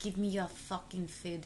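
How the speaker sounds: failed put-on Russian accent. Imagining mutated Chernobyl creatures demanding food, in a bad attempt at a Russian accent. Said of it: "I was trying to do fucking Russian".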